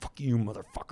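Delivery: angry, hushed, furious whisper. Retelling a quarrel at a restaurant table: imitating an angry whisper. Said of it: "whispering too".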